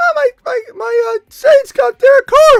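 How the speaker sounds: thrilled, excited cry, very high-pitched and very loud. Imitating a caller's imagined excited reaction to a trade: Alex Cruz excited high-pitched voice. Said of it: "the Alex Cruz with a real high-pitched voice".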